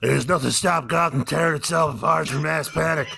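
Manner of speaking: dumb put-on superhero voice. Recapping a Batman movie scene, the speaker voices Batman's exposition: dumb Batman voice. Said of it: "I'm doing this dumb voice".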